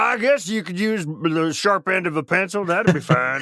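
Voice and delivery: put-on puppet voice. Imitating a careless advisor while warning about whose guidance to accept, Muppet voice. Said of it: "that was a very Muppet voice".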